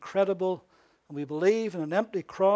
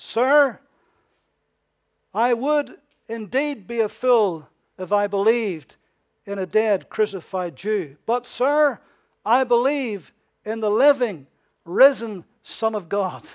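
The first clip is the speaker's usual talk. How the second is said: put-on firm, assured, strong, confident, raised voice; 3 semitones higher, 7 dB louder than usual. Retelling a pastor's answer to a speaker who called him a fool, strong, confident voice. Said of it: "in a strong, confident voice".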